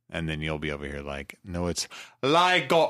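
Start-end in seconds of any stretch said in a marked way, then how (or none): 1.5-3.0 high, put-on, vaguely Cockney accent. Acting out the listener's imagined correction, in a Cockney-ish accent. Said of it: "That was like Cockney".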